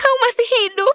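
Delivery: tearful weeping. Finding someone alive after thinking they were dead: crying. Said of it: "kenapa menangis?".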